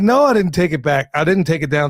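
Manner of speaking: plain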